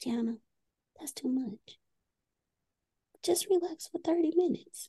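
tiny, very high, soft little voice. Acting out her self-sabotaging inner voice talking in her ear, little small voice. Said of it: "she'll start off with a little small voice like".

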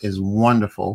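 normal talking voice

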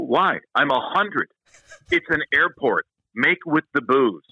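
play-acted irritated, angry, insistent, demanding tone. Retelling demanding a beer from airport staff: retelling own angry demand. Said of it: "talking to an angry Irishman".

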